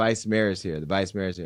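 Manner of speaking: ordinary talk, nothing marked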